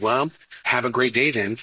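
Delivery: normal talking voice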